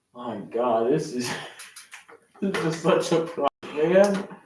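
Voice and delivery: words broken up by laughing. Reacting to a broken piece of trestle, laughing while talking. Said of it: "I'm sorry that I'm laughing so much".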